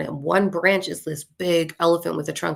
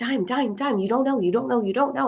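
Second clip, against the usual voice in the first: put-on play-acted, high, eager, excited kids' chatter; 7 semitones higher than usual. Retelling kids who came running and flooded around them, imitating excited kids. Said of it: "all excited".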